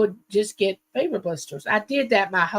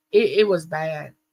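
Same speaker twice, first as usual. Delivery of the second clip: ordinary delivery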